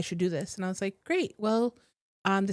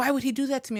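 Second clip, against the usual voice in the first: acted, high, outraged, indignant, furious outburst; 5 semitones higher than usual. Retelling a client's reaction to a reading, imitating someone furious. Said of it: "And she was furious".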